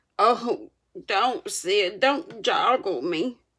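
groaning, moaned-out words. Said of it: "Tom moaned out".

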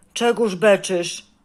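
loud, rude, surly snap. Narrator reads Kaj's question to the girl, rude and snappish. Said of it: "zapytał opryskliwie".

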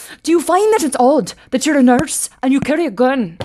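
put-on clumsy Irish accent. Retelling an Irish TV reporter questioning a nurse: butchered Irish accent. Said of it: "I butchered your accent".

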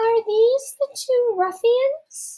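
high-pitched voice. Cutting in before the two accused can answer, in a high voice. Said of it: "I asked in my high voice".

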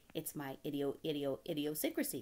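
usual speaking voice

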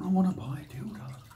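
sheepish, soft, embarrassed half whisper. Retelling a woman who came into the shop near closing: embarrassed half-whisper. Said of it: "Bit embarrassed, half whispers".

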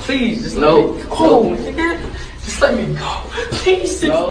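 breaking down in tears, sobbing, begging. A man breaking down over news about his girlfriend, crying. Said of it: "He is crying".

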